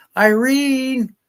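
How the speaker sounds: very loud, very high, long drawn-out call. Telling a joke, retelling an old man hollering for his wife. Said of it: "he hollers at".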